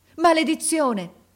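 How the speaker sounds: shrill, very high shouting. An officer runs toward a boy who has just fallen: shouted curse. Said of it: "gridò l'ufficiale accorrendo".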